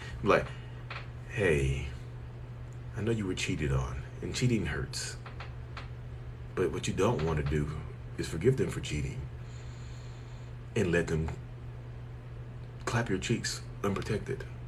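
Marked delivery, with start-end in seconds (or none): 1.3-14.4 serene, calm, breathy, hushed near-whisper murmur. Advising someone who was cheated on, in a calm, zen-like tone. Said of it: "I can do it from a position of being zen like".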